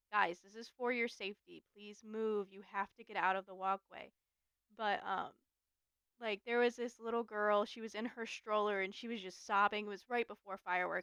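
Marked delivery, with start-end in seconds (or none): 0.1-4.1 mock firm, stern, no-nonsense tone. Retelling how a cast member warns guests at fireworks: imitating a stern voice. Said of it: "until we get into that stern voice".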